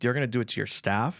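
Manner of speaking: normal talking voice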